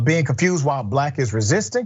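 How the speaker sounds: ordinary delivery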